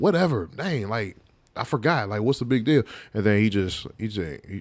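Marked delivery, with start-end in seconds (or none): 0.0-2.8 play-acted mouthy, dismissive talk-back, brushing it aside. Retelling talking back to a yelling dad: imitating mouthing off. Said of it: "I just start mouthing off to him".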